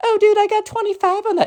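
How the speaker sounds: put-on girl voice, pitched way up high. Retelling the answer heard on the call: imitating a girl voice. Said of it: "in the girl voice".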